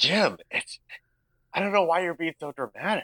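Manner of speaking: botched, very high, husky voice. Voicing the wife character in a scene: busted husky wife voice. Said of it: "I busted the voice".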